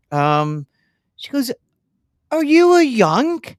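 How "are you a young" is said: put-on high little Birmingham accent. A bar worker questions the speaker after he bought a round, imitating a Brummy accent. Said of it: "with that beautiful little uh, Brummy accent".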